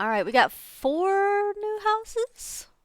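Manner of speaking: slow, high, questioning rise in pitch on houses.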